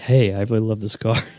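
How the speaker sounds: restrained, toned-down, low-energy voiceover read. Mimicking the guest's voiceovers recorded at night while kids sleep; mock hushed voiceover. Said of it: "like not trying to wake up your kid".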